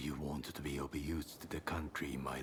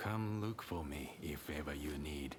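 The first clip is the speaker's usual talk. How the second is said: usual speaking voice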